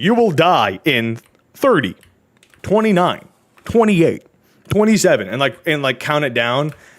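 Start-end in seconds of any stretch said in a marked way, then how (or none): 0.0-5.3 mock big, loud, echoing booming voice. Retelling what the voices say: imitating a loud echoey booming voice. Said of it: "in a loud, echoey boom voice is like".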